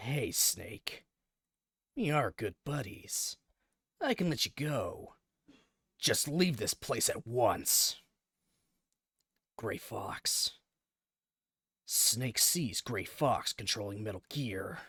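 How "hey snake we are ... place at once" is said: deliberately lazy, shoddy, bad put-on voice. Narrating a game, reading another character's lines to Snake, bad Snake voice. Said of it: "keep using the shitty Snake voice I'm using".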